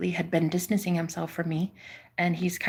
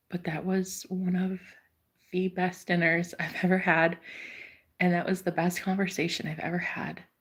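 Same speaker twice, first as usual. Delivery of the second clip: tearful, near tears, voice welling, barely holding together. Speaking to someone after a memorable dinner, on the verge of tears. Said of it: "I'm about to cry".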